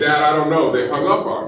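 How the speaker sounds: ordinary delivery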